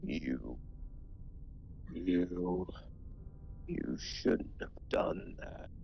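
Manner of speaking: whispered, angry, wrathful ghostly voice. Game master voicing a ghost as a player's book burns, angry ghostly voice. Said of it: "an angry, ghostly voice that says".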